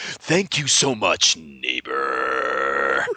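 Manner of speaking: very deep, slow, drawn-out voice. Retelling how a neighbor thanks you for sugar: LaFontaine voice. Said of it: "He really talks like that".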